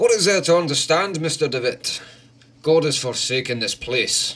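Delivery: bad put-on Scottish accent. A character answers another's questions about burying corpses; awful Scottish accent. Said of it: "some absolutely god awful Scottish accents".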